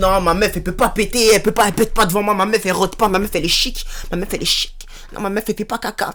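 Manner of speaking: talking like one of the dudes. Imitating guys who claim their girlfriend never farts: imitating some guys. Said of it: "y a des boucs, ils sont là en mode".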